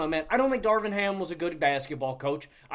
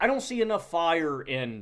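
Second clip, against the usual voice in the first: ordinary delivery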